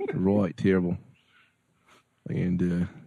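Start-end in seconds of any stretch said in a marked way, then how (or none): 0.1-1.0 put-on Australian accent. Giving a verdict on a movie to other speakers: australian accent. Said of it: "that's not a bad Australian".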